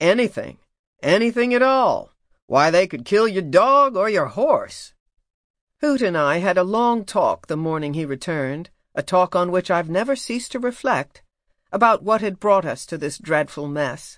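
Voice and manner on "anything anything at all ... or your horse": put-on drawn-out West Virginia accent. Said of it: "in his slow West Virginia drawl".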